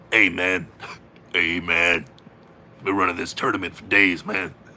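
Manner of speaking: put-on raspy voice. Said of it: "Sounds like he swallowed a frog".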